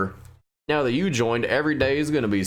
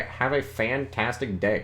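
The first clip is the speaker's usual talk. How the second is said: ordinary delivery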